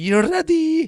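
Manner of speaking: put-on heavy Egyptian accent, very high and loud. Quoting a grandmother who is anxious about the end times: imitating grandma's Egyptian accent. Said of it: "she's Egyptian, so she does, like, this".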